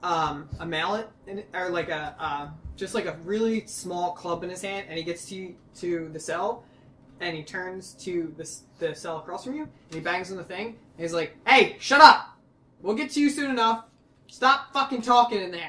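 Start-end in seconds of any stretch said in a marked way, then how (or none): 11.5-15.7 shouting, higher and louder. Voicing a guard banging on a cell door: guard yelling at prisoners. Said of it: "banging, yelling".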